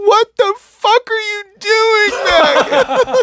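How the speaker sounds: very high, very slow, drawn-out tearful voice. Retelling a girl in the crowd standing up mid-show: imitating someone crying. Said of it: "she was crying".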